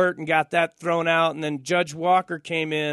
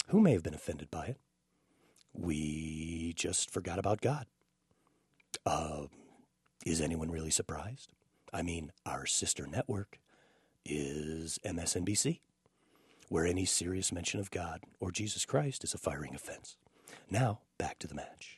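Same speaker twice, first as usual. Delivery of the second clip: very low, very quiet, hushed golf announcer murmur; 11 semitones lower, 13 dB quieter than usual. Delivering a mock apology from a golf announcer, in a golf announcer voice. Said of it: "That was my golf announcer voice".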